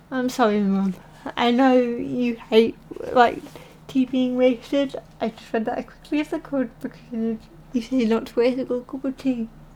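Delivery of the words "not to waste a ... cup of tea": ordinary delivery, nothing marked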